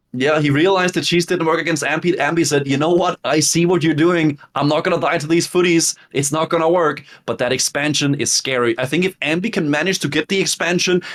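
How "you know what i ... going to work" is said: normal talking voice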